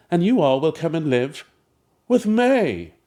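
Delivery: stately queen voice with a distinctive inflection. Retelling how a workshop participant playing a queen said a line: imitating a woman playing a queen. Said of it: "This woman in the workshop was playing a queen".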